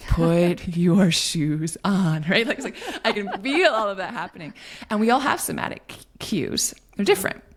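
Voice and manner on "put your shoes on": very slow, drawn-out, raised, frustrated. Demonstrating talking to the kids when getting frustrated, speaking really slowly. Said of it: "I'll like start speaking really slowly".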